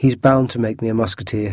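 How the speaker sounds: plain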